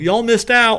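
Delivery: very high, loud half-yelling. Retelling yelling during a raffle everyone they know wins: imitating yelling. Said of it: "we're all kinda yelling".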